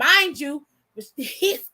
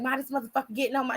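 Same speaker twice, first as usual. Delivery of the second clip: put-on angry outburst, quieter; 7 dB quieter than usual. Retelling a call to mom on the bus: imitating own angry cussing. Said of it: "I'm so mad, I'm shaking".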